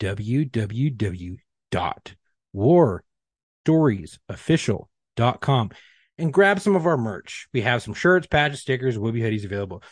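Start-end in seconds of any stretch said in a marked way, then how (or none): 0.0-5.7 slower, careful, much lower pitch. Host repeats the show's website address for listeners, repeating it slower. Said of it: "Let me say it again a little bit slower".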